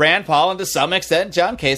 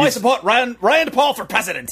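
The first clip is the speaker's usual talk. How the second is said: terrible fake South African accent, pitched up; 7 semitones higher than usual. A speaker attempts an accent they admit they can't do: bad South African accent. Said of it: "you're the Cockney woman in it".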